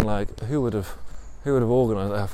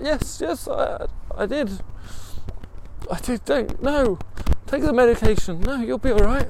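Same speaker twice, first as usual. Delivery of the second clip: put-on crying, much higher; 14 semitones higher, 3 dB louder than usual. Retelling a woman's answer about a last trip, imitating someone crying. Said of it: "she's crying".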